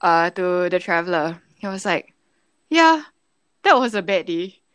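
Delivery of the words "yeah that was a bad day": mock casual, unbothered, offhand tone. Retelling what he said to the traveller after being robbed: imitating a nonchalant remark. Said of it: "he says it so nonchalantly".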